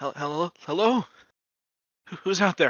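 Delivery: chattering teeth. A character calls out to a voice coming from outside: through chattering teeth. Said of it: "through the the chattering of teeth".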